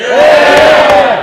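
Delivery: loud, high-pitched shout of "hear".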